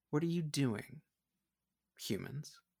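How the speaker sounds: smooth, silky, high voice. Narrating a scene as a voice greets humans landing on a beach, silky Umara voice. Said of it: "a silky voice says".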